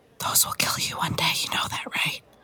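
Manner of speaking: hushed. A woman comes up behind the boys and speaks to one of them, quiet. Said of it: "she just quietly goes up to Ryan and goes".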